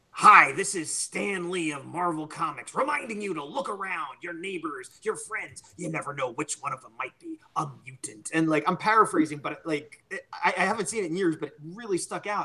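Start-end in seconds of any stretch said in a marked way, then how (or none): 0.2-8.3 put-on announcer voice. Recalling the X-Men pilot's TV introduction, doing a Stan Lee impression. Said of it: "I remember he- hearing this voice".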